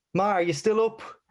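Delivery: play-acted, very high, loud shouting voice. Telling a joke where a woman calls to her mother upstairs, shouting up the stairs. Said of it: "shouts up the stairs".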